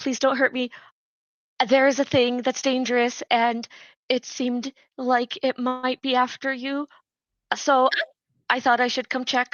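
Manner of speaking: put-on submissive, apologetic tone. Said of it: "do the, like, submission thing".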